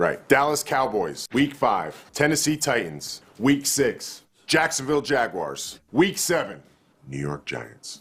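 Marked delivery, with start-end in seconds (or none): 7.1-8.0 understated, hushed half-whisper. Announcing a football team's schedule, team name half-whispered. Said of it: "Why did you whisper? / I feel like less is more here".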